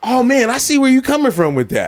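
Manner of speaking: acted charismatic tone. Retelling own reply to someone during a talk: imitating a charismatic reply. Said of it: "the way he said that with charisma".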